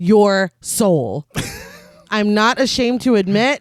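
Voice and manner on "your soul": deep, terrifying put-on demonic voice. Recounting a scene where a woman's face turns demonic, deep, terrifying demonic voice. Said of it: "says in a deep, terrifying voice".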